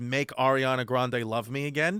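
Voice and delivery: ordinary talk, nothing marked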